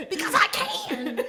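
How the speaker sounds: very high, sassy, snappy voice. Quoting a mom's reply to "why you yelling": imitating mom. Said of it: "that is exactly my mom".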